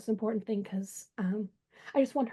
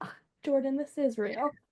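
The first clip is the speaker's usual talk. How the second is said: mock teasing, playful scoff through laughter; 3 semitones higher than usual. Retelling the same dream again, imitating a playful laughing scoff. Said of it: "kind of laughing playfully and was like".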